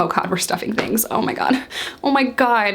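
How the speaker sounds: mock panic, rising, freaked-out, losing it. Retelling being in a back seat as a deal happens: retelling own panicked reaction. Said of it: "I'm freaking out".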